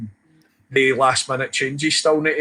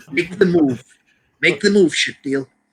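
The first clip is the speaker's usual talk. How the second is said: half-decent movie tough-guy voice, taunting; 3 semitones higher than usual. Retelling a birthday party, doing the Taxi Driver bit: half decent De Niro impression. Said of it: "I could do a, a half decent De Niro".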